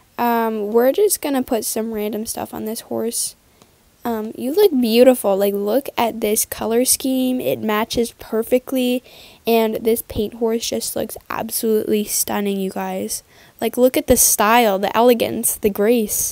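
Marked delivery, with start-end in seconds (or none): none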